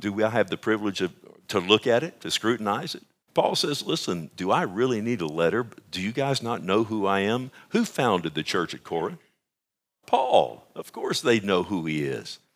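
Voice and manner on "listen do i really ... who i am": ordinary talk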